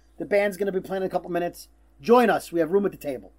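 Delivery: ordinary talk, nothing marked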